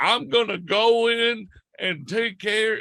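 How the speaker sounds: exaggerated, very high, over-the-top Southern accent. Speaker describes a movie trailer, quoting the actor in an over-the-top Southern accent. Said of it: "such an over the top Southern accent".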